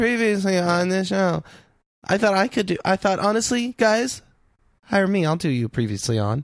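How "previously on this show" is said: flat, one-note monotone delivery. Imitating the recap announcer's line: one-note Donna voice. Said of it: "a kind of one note Donna".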